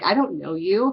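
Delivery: forceful, angry, firm delivery. Retelling telling off a stranger at a bar: retelling a forceful angry retort. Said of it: "got a bit more forceful with that and".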